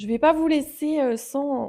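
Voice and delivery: loud, high-pitched shout.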